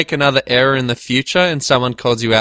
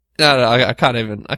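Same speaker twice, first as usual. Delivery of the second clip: usual speaking voice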